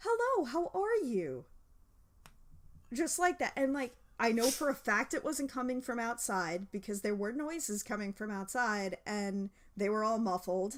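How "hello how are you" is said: sweet, very high, slow, polite and friendly voice. Retelling an unknown voice heard on the stairs: imitating a nice greeting. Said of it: "really nicely".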